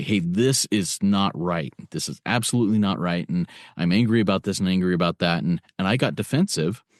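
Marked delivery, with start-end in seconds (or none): none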